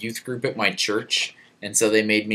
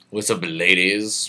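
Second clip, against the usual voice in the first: ordinary talk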